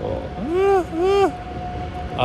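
very high, whimpering dog whine.

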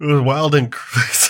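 spoken through a yawn. A podcast host keeps talking to co-hosts while yawning mid-sentence. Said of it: "Mid yawn".

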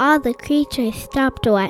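ordinary delivery, nothing marked

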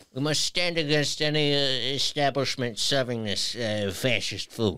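Italian gangster voice.

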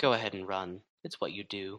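mumbled in a put-on voice. Voicing a character as another turns to storm off: Kaizo mumbling. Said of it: "Kaizo mumbles".

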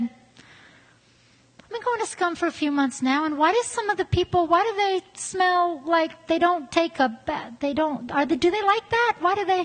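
sweet-voiced, confused, puzzled tone. Retelling an older churchgoer's confused question: imitating a sweet voice. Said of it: "with her sweet voice".

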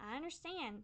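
quiet, soft squeaky voice. A narrator answers another character talking about settling down, squeaking softly. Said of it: "I squeaked softly".

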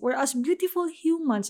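beautiful lifted and stressed.

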